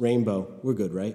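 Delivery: normal talking voice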